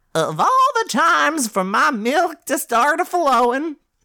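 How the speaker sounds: put-on very high, slow, drawn-out elderly woman voice. Reading a line aloud from a story: old lady voice. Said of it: "read that in an old lady voice".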